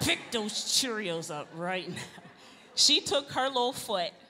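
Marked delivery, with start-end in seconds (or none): 0.0-2.0 put-on through teeth, much lower, slower. Retelling your brother warning a little girl, talking through teeth. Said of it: "how you talk through your teeth".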